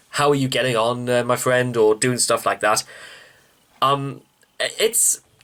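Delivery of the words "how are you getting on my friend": ordinary talk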